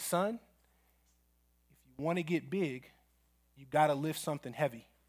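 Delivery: slow, hushed, drawn-out stage whisper. Retelling what a coach told a lifter under the bar: imitating a half-whisper. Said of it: "and then he whispers to him".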